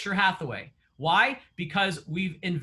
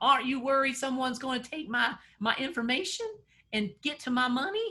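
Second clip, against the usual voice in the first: put-on Southern accent, pitched up; 5 semitones higher than usual. Retelling his mom's worry about automated bill pay, imitating mom's Southern accent. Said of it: "She has a southern accent".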